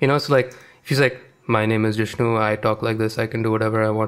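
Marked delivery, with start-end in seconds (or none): 1.5-4.1 Indian accent carried by the tongue, level, lips barely moving. Demonstrating how he talks, with an indian accent, lips barely moving. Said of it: "you can almost not move your lips while speaking Indian".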